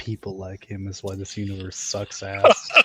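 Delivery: muttering under the breath. Voicing Bahamut as a departing soul walks off: Bahamut muttering under his breath. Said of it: "Then Bahamut's under his breath".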